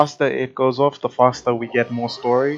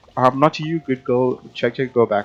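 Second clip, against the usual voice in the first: usual speaking voice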